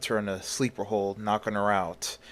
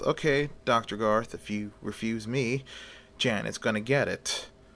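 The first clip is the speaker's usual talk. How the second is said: usual speaking voice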